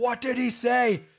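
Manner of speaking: put-on, high, screamed crying-out. Retelling a TV scene at a grave: imitating Ben screaming. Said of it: "Ben is screaming".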